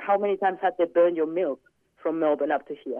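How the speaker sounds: normal talking voice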